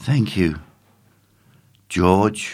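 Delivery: shaky, trembling, fearful, frightened voice. Shaking with fear and cold, he adds his thanks after the others: softly, shaking with fear. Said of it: "Tim added softly".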